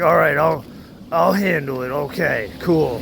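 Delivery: imitated sarcastic tone. Retelling a driver's reply after being warned about her bumper: imitating someone being sarcastic. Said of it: "She's being sarcastic about it".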